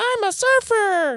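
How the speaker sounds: put-on very high cartoon kid voice. Quoting a cartoon kid from a clip: imitating Rod Flanders. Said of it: "I think it's Rod going".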